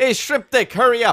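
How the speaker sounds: put-on very high, loud old Jamaican lady voice. Retelling what a lady in line at the ATM said to them, imitating an old Jamaican lady. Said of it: "old Jamaican lady".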